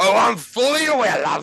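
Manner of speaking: shouting high and loud. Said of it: "he's gonna yell back".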